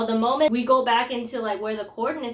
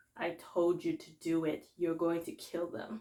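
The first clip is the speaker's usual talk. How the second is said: low, hushed, intimidating, restrained, never yelling; 5 semitones lower, 10 dB quieter than usual. Describing how a show's dad character talks, imitating a low, not-yelling voice. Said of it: "goes like low in his voice and he's not even yelling".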